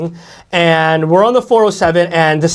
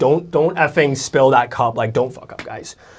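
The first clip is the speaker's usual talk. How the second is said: play-acted, pissed-off, fed-up angry tone; 4 semitones lower, 5 dB quieter than usual. Retelling warning passengers not to spill the cup: imitating own angry warning. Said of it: "So I'm sitting there so pissed off".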